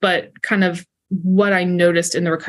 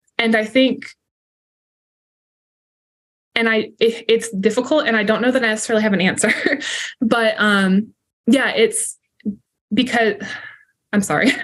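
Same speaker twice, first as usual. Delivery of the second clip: nervous, anxious, jittery, freaking out; 4 semitones higher than usual. Speaker discussing the surgery breaks off, nervous, freaking out. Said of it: "I'm really nervous and I'm just kind of like freaking out".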